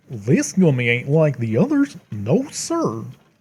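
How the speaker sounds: bad put-on goofy cartoon dog voice, swooping. Speaker eating gummies jokes about an odd one; bad Goofy impression. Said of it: "That was a really bad goofy impression".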